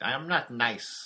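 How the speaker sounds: loud, very slow, booming cartoon villain voice. Quoting a line from the He-Man and She-Ra Christmas special: Skeletor voice. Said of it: "he's like".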